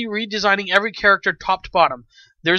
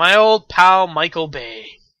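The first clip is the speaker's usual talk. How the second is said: heavy, dry, sarcastic tone; 3 semitones lower, 4 dB louder than usual. Introducing the next movie news item, calling someone an old pal: sarcastic tone. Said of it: "I say that with sarcasm".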